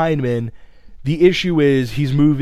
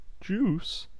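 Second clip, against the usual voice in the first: very quiet, barely above a hush, pitched-up put-on voice; 6 semitones higher, 11 dB quieter than usual. Introducing the latest recruit with one word, in a David Schwimmer impression. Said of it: "That was my impression of David Schwimmer as Robert Kardashian".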